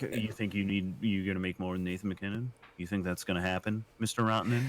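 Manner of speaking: ordinary talk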